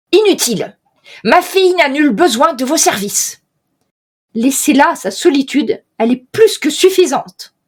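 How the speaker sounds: hard, hostile voice. Voicing a lord who turns down an offered service: harsh, hostile voice. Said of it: "Il a une voix dure, mais vraiment hostile".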